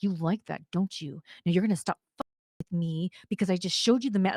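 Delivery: whispered. Retelling pinning someone against a wall: retelling a whisper. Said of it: "I whispered in his ear".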